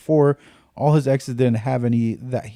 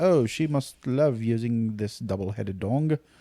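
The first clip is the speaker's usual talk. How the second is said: fake British accent, clueless-sounding; 6 dB quieter than usual. Imagining a clueless man's reaction to what he found; put-on British accent. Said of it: "Why are you British".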